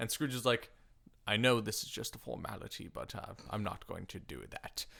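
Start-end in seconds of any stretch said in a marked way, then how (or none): 1.3-4.8 rough, creaky actor voice. Retelling Scrooge turning down his nephew's dinner invitation: Michael Caine impression. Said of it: "That was my Michael Caine".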